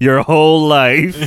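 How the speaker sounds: quick, cutting, snarky sarcastic tone with no hesitation. Retelling Wednesday's reply at camp: imitating a snarky reply. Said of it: "not skipping a beat with the snark".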